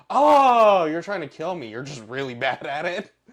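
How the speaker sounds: very loud, high mocking tone. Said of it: "He was mocking him the whole time".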